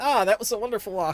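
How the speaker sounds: casual, unbothered, nonchalant tone. Voicing characters strolling back into camp after a walk: nonchalant. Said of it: "nonchalantly come back five minutes after".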